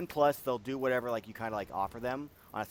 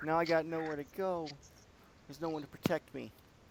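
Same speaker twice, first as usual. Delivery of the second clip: high, tearful, sobbing through every word; 6 semitones higher than usual. Playing a girl left with nowhere to go, crying. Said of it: "And she's like like crying".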